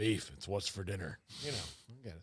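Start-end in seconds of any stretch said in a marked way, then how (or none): 0.0-1.2 deep, husky, low, raspy, sultry voice. Talking about getting a sultry rasp, doing a raspy Sam Elliott impression. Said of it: "I can't really do a good Sam Elliott".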